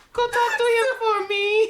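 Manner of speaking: very high, loud, mock shy anime fangirl squeal.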